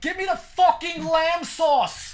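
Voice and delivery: put-on odd mix of British and New York accents. You act out how you yell at your dog, in a weird uk new york mix accent. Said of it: "weird U K New York mix accent".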